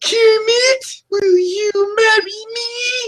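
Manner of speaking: very high, drawn-out character voice. Doing an impression, proposing to Kermit: Miss Piggy voice. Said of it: "my Miss Piggy impression".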